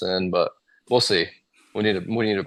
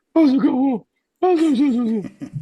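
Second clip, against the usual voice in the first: high falsetto, higher and louder; 5 dB louder than usual. Showing how they talk to dogs: falsetto dog-talk voice. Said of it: "I go into a falsetto".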